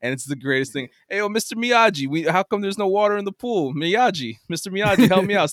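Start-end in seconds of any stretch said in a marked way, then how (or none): 1.1-5.5 put-on higher kid voice with Newark New Jersey accent. Retelling how Daniel LaRusso talks in the original movies: imitating Daniel LaRusso's way of talking. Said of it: "the way he talks".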